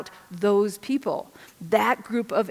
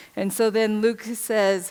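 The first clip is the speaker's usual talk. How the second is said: plain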